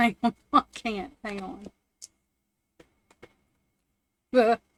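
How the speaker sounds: cracking up laughing, words breaking up mid-sentence. Trying to continue a card reading while laughing hard while talking. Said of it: "I was laughing so hard".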